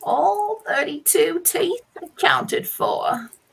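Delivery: put-on elderly New Jersey accent. Coached to think Italian, an actor tries an old New Jersey accent. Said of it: "I can do Jersey, but old".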